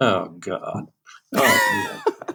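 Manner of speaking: slow drawn-out groan. Retelling the piano player's reaction to another restart: imitating Omar groaning. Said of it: "Omar going".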